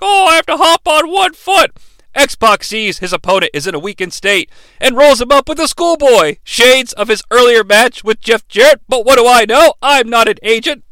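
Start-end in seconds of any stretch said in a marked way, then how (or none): 0.0-1.7 high, put-on, hobbled, hurt-sounding wrestler voice. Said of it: "He's like".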